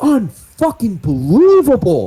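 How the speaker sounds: shrill, very high, swooping shout. A player describes his character handing over the rifle and walking over; yelling. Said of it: "I'm just like yelling at this point".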